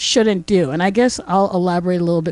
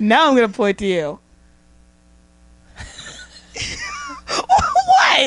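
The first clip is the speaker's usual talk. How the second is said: giggling, giggly, much higher pitch; 8 semitones higher than usual. Starting a recording while having a case of the giggles, giggling. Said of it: "I'm having a case of the giggles".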